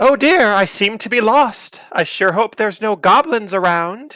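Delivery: top-of-the-lungs yell, very high and very loud. Player describes Aya climbing a hill, then Aya shouting at the top of her lungs. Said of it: "shouting at the top of her lungs".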